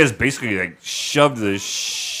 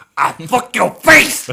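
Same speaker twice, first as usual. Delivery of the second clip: shrill, high, loud wrestler-style taunting yell; 11 semitones higher, 7 dB louder than usual. Show off your imitation to the others, doing an Iron Sheik imitation. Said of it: "we do my Iron Sheik imitation".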